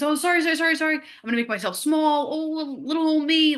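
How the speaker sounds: put-on high, meek, endlessly apologetic, shrinking voice. Imitating her past self on the street: imitating her past apologetic self. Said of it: "very apologetic for my existence".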